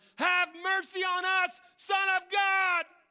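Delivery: very high, shrill, slow, pleading scream at top of lungs. Speaker retells how these guys kept crying out to Jesus, retelling a scream for mercy. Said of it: "continuously screaming at the top of their lungs".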